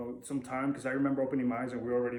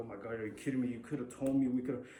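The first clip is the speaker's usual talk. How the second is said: mimicked crying, tearful voice. Retelling his mom's reaction on hearing his news, imitating her crying. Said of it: "she starts crying".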